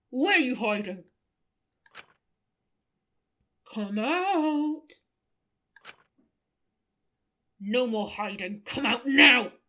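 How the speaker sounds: covered, smothered-sounding, muffled voice. Voicing someone chasing another person, muffled voice. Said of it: "we go for muffled voice".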